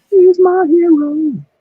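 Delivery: loud squeaky squeal.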